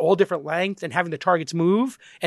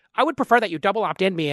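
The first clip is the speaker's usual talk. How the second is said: put-on nerdy voice; 2 semitones higher than usual. Retelling an email exchange, quoting Andrew's reply in a nerdy voice. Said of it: "this is my like nerd voice".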